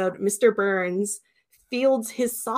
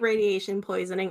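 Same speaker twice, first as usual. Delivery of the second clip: usual speaking voice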